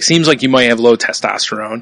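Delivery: ordinary delivery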